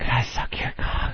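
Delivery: imitated whispered voice. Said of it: "this whispering that I can't quite make out".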